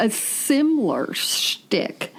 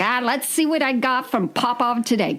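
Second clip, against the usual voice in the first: put-on New York accent, like a New Yorker; 3 semitones higher than usual. Quoting a man in a video that only shows his hands, New York accent impression. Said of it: "that was a New York accent, by the way".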